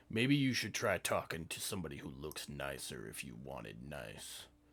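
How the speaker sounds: snarling, hostile, dismissive tone. A character answers someone pressing him for information, snarling. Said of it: "And he snarls at you".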